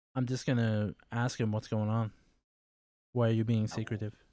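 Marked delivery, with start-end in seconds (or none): 3.1-4.1 much quieter, faster, nonchalant. A player questions a hooded character moving a crate, very quiet and nonchalant. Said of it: "Very quietly and nonchalantly".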